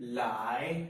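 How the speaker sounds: pitch climbing through "lie". Demonstrating the second tone on a word meaning to come: rising second tone on lie. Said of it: "Now this is the second tone".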